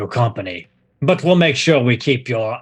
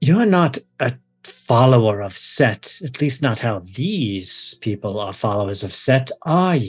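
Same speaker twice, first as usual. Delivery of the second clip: hushed, whispered voice. Narrator voicing an unseen figure speaking behind the listener's ear, whispered voice. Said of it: "you hear a whispered voice behind your ear".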